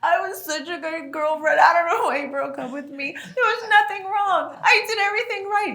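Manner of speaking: acted, very high, wailing, tearful bawling sob. Speaker retelling crying to her dad after a high-school breakup, imitating bawling. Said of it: "I was bawling my eyes out".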